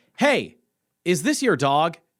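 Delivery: loud, called-out hollering in a mock woman's voice. Recounting a woman calling down from a porch, imitating a woman shouting. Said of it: "this woman on like a porch just like shouted down to me".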